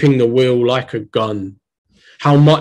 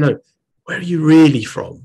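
mock-whispering; 3 semitones higher than usual. Retelling a woman leaning in close to ask a question: imitating a whisper. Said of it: "came in like really close as in to whisper".

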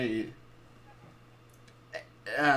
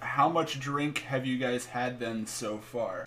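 normal talking voice

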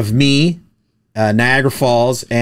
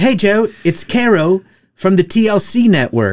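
put-on slow, pitched-up English accent; 7 semitones higher than usual. Retelling how Caro from the TLC network greeted you, as a Caro impression with an English accent. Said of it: "She had an English accent".

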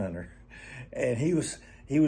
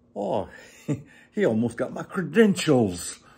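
amateur, put-on English accent, raised pitch; 2 semitones higher, 6 dB louder than usual. Retelling what a man said after a viper sprang at him, attempted english accent. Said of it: "he had an English accent. I can't do an English accent, but I'll attempt it".

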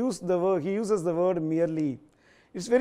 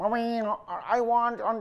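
put-on shrill crying child voice, much slower; 4 semitones higher than usual. Explaining the infancy age in the lines, shrill crying child voice. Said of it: "Like that sound comes from a child".

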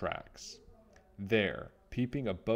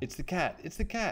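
high, frightened, alarmed cry; 9 semitones higher than usual. Narrator reads Squeak the mouse's line to Nibbles, crying out in fright. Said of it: "he cried".

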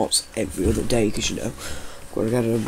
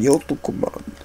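imitated Russian accent; 4 semitones higher than usual. Playing a game, repeating a character's line, imitating a Russian accent. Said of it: "He sounded Russian".

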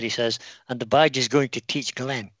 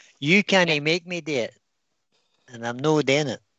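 best-effort put-on Edinburgh Scottish accent; 2 semitones higher than usual. Showing how they say it in Scotland, put on your best Edinburgh accent. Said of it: "That was my best Edinburgh accent there".

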